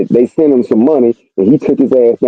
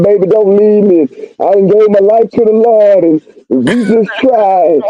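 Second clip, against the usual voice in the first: put-on desperate, imploring, begging voice; 9 semitones higher than usual. Imitating a prisoner begging his partner not to leave: imitating a prisoner begging. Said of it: "You up here begging and pleading".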